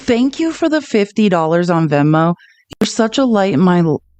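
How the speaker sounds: voice catching, choked up on the edge of tears. Thanking a donor for fifty dollars, choked up, about to cry. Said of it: "I'm gonna cry".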